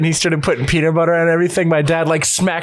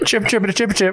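weird, wonky Aussie-Kiwi accent, chirped; 3 semitones higher than usual. Asked to chirp like a New Zealand animal, in a weird Aussie Kiwi accent. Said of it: "In a weird Aussie Kiwi accent".

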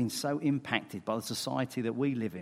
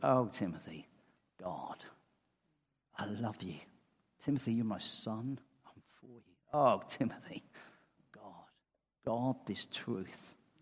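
put-on tender voice, quieter; 4 dB quieter than usual. Voicing Paul's letter to Timothy: acting out Paul's tenderness. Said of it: "You can almost hear it in his voice".

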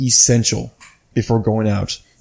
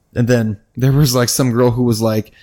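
usual speaking voice

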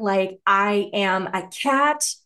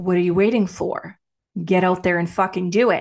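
mock stern, harsh and judgmental scolding tone; 3 semitones lower than usual. Recalling reading a pulled card a few days ago: acting judgmental. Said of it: "I read it with judgment".

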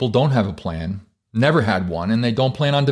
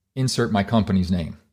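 plain

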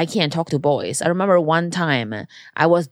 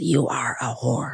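soft, disapproving, judgmental scolding voice; 3 semitones lower, 5 dB quieter than usual. Quoting what her mom says to her, imitating mom's judgmental voice. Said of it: "The judgmental voice".

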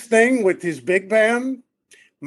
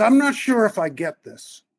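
hesitant, uncertain, confiding tone. Retelling what Peter leaned over and said: imitating Peter saying it quietly. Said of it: "'But I'm gonna say it quietly.'".

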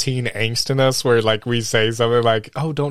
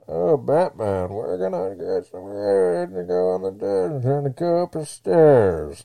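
muffled, mumbled, masked villain voice; 4 semitones higher, 3 dB quieter than usual. Complaining nobody could understand him, a speaker does a Bane impression. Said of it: "this is Bane".

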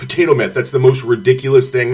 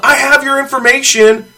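mock sharp shout, shrill, pitched very high; 12 semitones higher, 4 dB louder than usual. Retelling what a woman yelled at him, mimicking her yell. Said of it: "She yelled".

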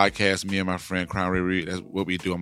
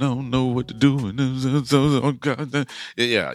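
mock nervous trembling voice, higher; 5 semitones higher than usual. Showing how someone who is nervous sounds: mock nervous trembling voice. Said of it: "you sound like you're trembling like this".

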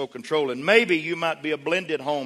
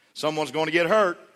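ordinary talk, nothing marked

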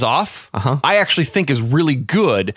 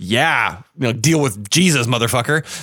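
put-on triumphant voice, lower; 3 semitones lower than usual. Retelling a film scene where the character turns triumphant: imitating Gabriel Byrne getting triumphant. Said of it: "get triumphant".

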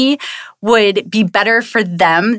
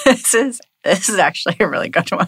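talking while laughing nervously; 3 dB quieter than usual. Reacting to the day's venting topic, nervous laughing while talking. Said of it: "I don't know why I'm laughing".

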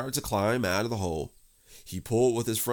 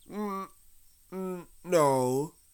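offhand, unbothered, careless, high little reply; 8 semitones higher than usual. Reading the story aloud, Rabbit asks Pooh if he is stuck: Pooh answering carelessly. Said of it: "said Pooh carelessly".

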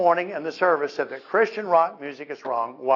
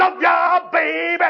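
very high, shrill, extremely loud rock scream; 6 dB louder than usual. Giving the audience an example, the speaker says it at 105 decibels. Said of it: "if I heard at 105 decibels".

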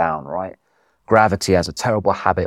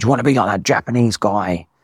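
put-on urgent shouting, barked; 2 semitones higher than usual. Retelling a guide's question on the descent: imitating someone shouting. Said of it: "he kept shouting at me, saying".

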